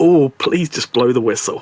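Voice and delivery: normal talking voice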